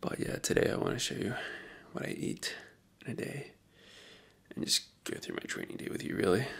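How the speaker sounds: very quiet, hushed, breathy whisper. Just woke up, everyone else in the house still asleep, speaking very quietly. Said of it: "I have to speak very quietly".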